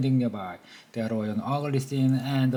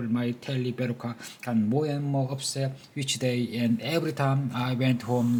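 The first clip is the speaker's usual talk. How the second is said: plain reading voice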